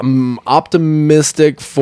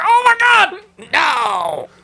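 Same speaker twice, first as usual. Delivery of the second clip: high, shouted, shocked and excited cry. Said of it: "I was like".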